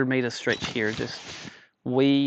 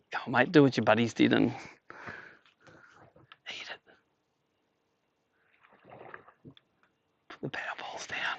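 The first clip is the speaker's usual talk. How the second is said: speaking in a whisper; 3 dB quieter than usual. Watching a fish near the bait, urging it to eat it, whispering. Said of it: "I don't know why I'm whispering".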